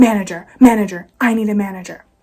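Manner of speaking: irate, very loud, insistent scream. Retelling a drive-through customer demanding a manager: imitating a customer screaming. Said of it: "I hear this lady scream".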